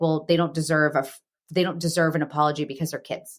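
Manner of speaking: usual speaking voice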